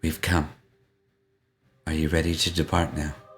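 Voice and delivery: light, soft whisper. Voicing Nineveh greeting the group before departing: light whisper. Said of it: "in a light whisper".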